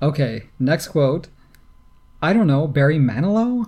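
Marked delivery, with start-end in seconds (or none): 2.2-3.7 offhand, unsure, tossed-off tone. Reading a quiz quote the way Sloane Stevens said it: imitating Sloane Stevens. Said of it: "That's exactly how she said it".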